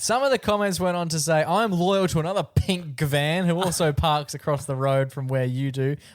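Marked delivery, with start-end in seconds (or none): none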